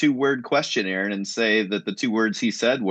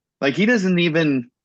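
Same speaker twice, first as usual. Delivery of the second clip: ordinary delivery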